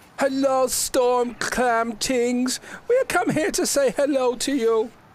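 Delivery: shrill, very high, loud shout. A player speaks as Madam Scoville greeting the Storm Clam Tings, yelling very loudly. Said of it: "just yells out very loudly".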